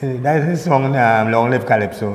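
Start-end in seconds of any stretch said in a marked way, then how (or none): none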